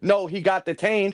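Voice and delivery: ordinary talk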